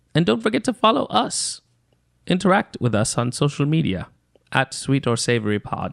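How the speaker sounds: wide-swinging mock British accent.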